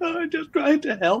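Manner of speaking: upset voice, very high-pitched. Retelling how an ex answered being told off: imitating someone upset. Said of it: "she got all upset".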